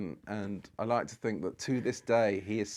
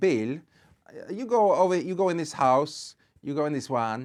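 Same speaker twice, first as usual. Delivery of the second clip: loud, high, put-on Italian accent; 7 semitones higher, 6 dB louder than usual. Retelling a moment at a playhouse, suddenly switching into an italian accent. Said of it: "I just went into Italian, this Italian accent".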